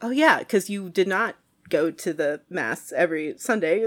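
ordinary talk, nothing marked

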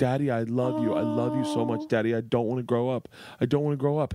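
acted sobbing. A father retells his daughter's words to him, imitating her sobbing. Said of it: "she starts sobbing, crying unconditionally, like just sobbing".

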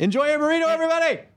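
very high, shrill shouted voice. Signing off and telling everybody to enjoy their burrito: yelling. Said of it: "I don't know why I yelled".

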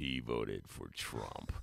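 very low, hushed, ominous narration voice. Telling a candidate how a rival's attack commercial would sound: ominous attack-ad voice. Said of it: "would be the ominous voice".

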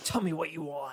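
low, soft, hushed masked dark-hero voice. Speaker describing a love interest quotes the Batman voice he does: Batman voice. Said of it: "does a really good Batman voice of".

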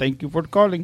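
imitated Indian accent. Retelling a call to a support line, quoting the agent in a put-on Indian accent. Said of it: "I'm just doing the accent".

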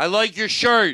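bellowed, very loud shouting. Repeating a compliment a third time after the listener keeps asking: shouting. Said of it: "Calm down".

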